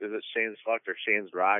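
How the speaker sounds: usual speaking voice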